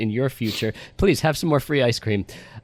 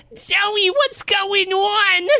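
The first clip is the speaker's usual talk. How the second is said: very high, intense New York mother voice; 4 dB louder than usual. Recapping a film scene, voicing Joey's mother: intensely New York mother voice. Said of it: "I'm doing a voice".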